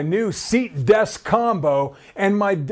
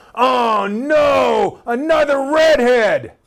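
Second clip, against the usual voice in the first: loud, angry, very slow outburst; 5 semitones higher, 4 dB louder than usual. Retelling what the new teacher said to the class: imitating a loud angry voice. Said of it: "loud, angry voice".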